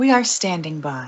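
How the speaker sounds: eerie, spooky, put-on creepy voice. Asking people to reach out and respond, in a put-on creepy voice. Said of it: "That's my creepy voice".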